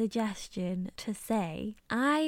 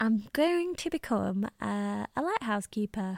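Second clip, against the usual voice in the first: normal talking voice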